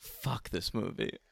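very quiet, harsh whisper under the breath. Retelling what the listener said during a movie, whispered. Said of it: "you just turned to me and whispered".

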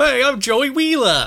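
very high, loud, belted cartoonish New Jersey accent. Showing how your New Jersey accent on a podcast came out, Joey Wheeler voice, New Jersey accent attempt. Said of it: "sounded entirely like Joey Wheeler from Yu-Gi-Oh!".

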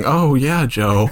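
patronizing, condescending, falsely encouraging tone. Retelling how another speaker just sounded: imitating a patronizing tone. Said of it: "That was the most patronizing".

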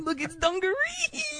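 very high, gushing, thrilled, excited voice. Joking about how the word sounds, pretend excited exclamation. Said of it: "somebody getting really excited over something".

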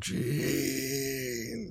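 put-on mournful tone, high and soft.

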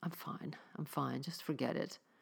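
whispered, very drawn-out, slow mutter. Marjorie, rubbing her wet cheeks, answers Angela's question; muttered. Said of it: "Marjorie muttered".

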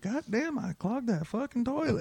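put-on high-pitched Texas accent. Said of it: "That's my Texas accent".

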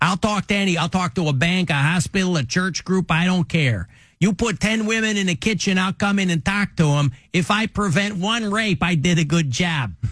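put-on high voice with Chicago accent. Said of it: "That's the Chicago accent".

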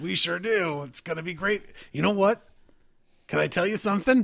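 put-on rough, gruff voice. In a role-play, one character chats with another, in a gruff voice. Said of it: "I've got a gruff voice just like you. ... [name]'s a good boy".

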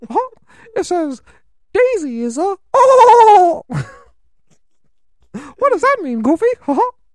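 "oh" dragged out, pitch way up, loud. Imagining a cartoon scene with Goofy, Mickey Mouse voice. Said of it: "imagine if Mickey Mouse was like that".

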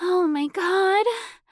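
very high, breathless panting. Chelsea pants, looking desperately down at Deirdre. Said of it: "Chelsea panted".

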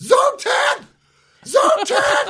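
put-on shrill, very high, repeated shouting. Retelling reading the alarm keypad display, retelling a yell. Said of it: "I just start yelling".

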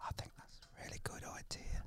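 soft unvoiced whisper. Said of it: "you were whispering".

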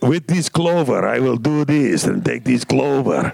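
put-on mean, nasty voice with Russian accent. Recalling playing the mean bird Vlad, in Vlad's Russian accent. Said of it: "and he was Russian, and he was like".

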